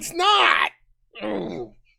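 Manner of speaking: annoyed, irritated, mad. Arguing with someone over why a joke is funny, annoyed. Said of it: "Why are you so mad?".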